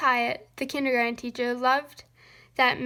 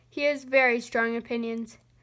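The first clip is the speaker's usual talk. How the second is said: plain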